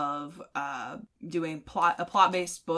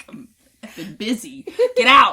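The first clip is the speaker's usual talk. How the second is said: mock annoyed tone, higher and louder; 7 semitones higher, 13 dB louder than usual. Retelling being interrupted while editing videos: retelling an annoyed brush-off. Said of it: "And I'm like".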